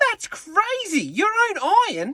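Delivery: very high-pitched, drawn-out voice. Retelling the father's reply to an iron on the camp list, very high-pitched. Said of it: "in a very high-pitched voice".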